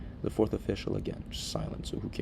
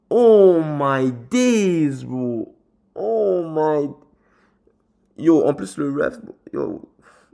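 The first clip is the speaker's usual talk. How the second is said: very loud, very slow, drawn-out fuming exasperation; 7 semitones higher, 15 dB louder than usual. Complaining about a referee's offside call: angry at the referee. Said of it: "so cheesed at this ref right now".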